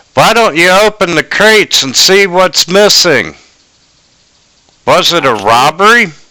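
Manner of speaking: high, yelled-out voice. Voicing a servant on a wagon train calling to everyone: servant yelling out. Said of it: "one of the servants on this wagon train yells out".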